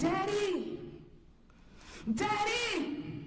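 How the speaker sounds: put-on very high little-girl voice, desperate crying out. Speaker retells phoning their dad that night, retelling calling out for dad. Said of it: "Could you imagine calling out for your dad?".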